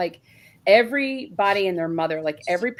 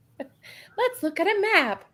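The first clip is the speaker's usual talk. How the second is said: put-on very high cartoon-kid voice; 12 semitones higher than usual. Group joking around while counting Facebook groups: Dora impression. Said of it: "sounded like Dora".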